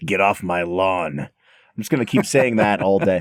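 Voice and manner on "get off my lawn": slow, raspy tough-guy voice. Joking about a raspy voice, quoting a movie line: Clint Eastwood voice. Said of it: "you're sounding a little, uh, Clinty".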